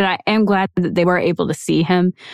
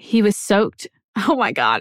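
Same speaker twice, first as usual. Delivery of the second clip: nervous, uncomfortable laughter; 2 semitones higher than usual. Describing a victim's injuries, laughing uncomfortably while holding back tears. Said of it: "I'm not laughing because it's funny".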